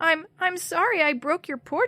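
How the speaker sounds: frightened little squeak, high-pitched and stammering. Narrator reads a scared character's reply to a shouted question, squeaking out a reply. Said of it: "she squeaked out a reply".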